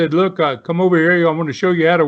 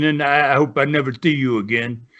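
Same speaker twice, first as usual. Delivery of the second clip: put-on speaking in a Dutch accent; 3 semitones lower than usual. Retelling what a wrestling teacher said after breaking a wrist: Dutch accent. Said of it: "in his, uh, Dutch accent".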